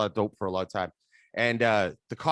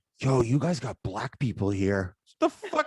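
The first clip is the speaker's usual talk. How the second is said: put-on whispering. Retelling what a guest picked up from the airport whispered in Toronto, retelling a whisper. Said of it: "he whispers to me".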